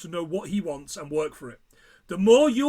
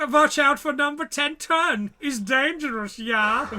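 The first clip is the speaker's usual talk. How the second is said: deliberate, slow, high put-on German accent; 7 semitones higher than usual. Speaker quotes a taunt before a sled run in a put-on German accent. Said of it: "I can do this accent".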